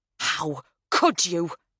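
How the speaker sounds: seething, furious, spat-out hiss. Reading a novel aloud, a sister confronting the other: spitting with anger. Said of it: "she spits".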